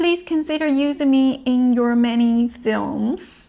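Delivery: ordinary talk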